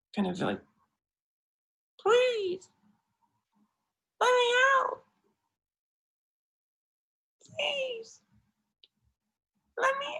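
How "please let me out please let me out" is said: small, tiny, very high little voice. Imagining teddy bears trapped against a window, in a small voice. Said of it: "(SMALL VOICE)".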